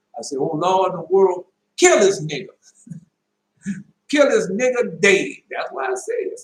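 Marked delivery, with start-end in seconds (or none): 0.3-5.3 loud, high-pitched cry with raised voice. Recounting a dream where a man pointed a gun at them, the speaker retells a loud cry. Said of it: "I say with a loud voice".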